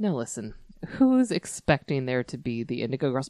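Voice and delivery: imitated flat, deadpan delivery. Retelling a comedian's stage bit: imitating a deadpan comedian. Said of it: "she is so deadpan".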